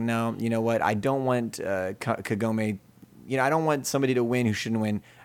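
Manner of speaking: ordinary talk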